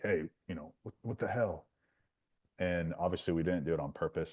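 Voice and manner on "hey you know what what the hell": put-on angry, pissed-off protesting complaint like a kid. Retelling a baseball game where a batter got hit, imitating an angry kid. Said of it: "he's all pissed and he's like".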